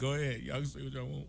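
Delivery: very soft, low, quiet voice through tears. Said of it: "I'm up here crying".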